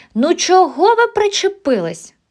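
high-pitched shouting, crying out. In a story, a girl defends a new classmate being teased, shouting. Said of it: "закричала Раїска Мняв".

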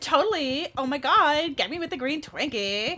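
loud put-on Valley Girl accent. Showing the voices given to Undertale characters: Valley Girl voice. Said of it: "I've been giving, like, half the characters Valley Girl voices".

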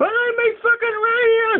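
acted, very high-pitched, frantic, furious berserk yell. Retelling a man's demand for his radio: imitating someone going berserk. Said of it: "went fucking, you know, berserk".

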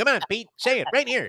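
mock pushy reporter voice, pitched high.

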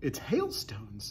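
whispering, bursting with eager excitement. Narrator voicing James as he watches the hail being shoveled, excited whisper. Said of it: "whispered James excitedly".

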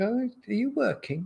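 pointed sarcastic tone. Retelling how a spouse asks while he plays games: imitating a sarcastic question. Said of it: "but she will be sarcastic".

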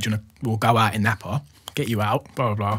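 ordinary delivery

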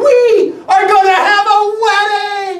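giddy, shrill, very loud, high-pitched shout. Narrator reading a woman running to find her husband: shouting. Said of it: "she shouted".

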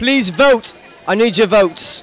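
attempted British accent, high. Telling fans to vote during British week, in your best British accent. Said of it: "say it in your best British accent".

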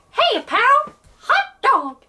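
voice going way up high, loud and sing-song. Taking your turn in an impressions face-off, do a Mickey Mouse voice. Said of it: "I'm sitting next to Mickey Mouse!".

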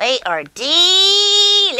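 very high goose puppet voice, delicious stretched out. In a puppet nursery-rhyme show, the goose puppet answers the host: Goosey goose puppet voice. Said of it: "[name], what are scrambled eggs doing in my rhyme? They are delicious. Are you hungry? Yeah. Go find [name] and her lamb and have lunch with them, okay? Okay. Everyone, wave bye-bye to [name]. Bye. See ya. Honk, honk".

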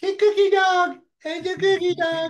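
put-on very high, loud baby-talk voice.

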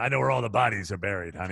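gravelly woman's voice with real rasp throughout. Quoting Shirley Barish, profiled in TV Guide, imitating Shirley Barish's gravelly voice. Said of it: "she had a real gravelly voice".

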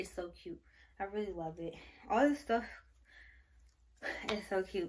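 breathless, out of breath. Showing off baby clothes in a video, out of breath. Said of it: "I'm out of breath".

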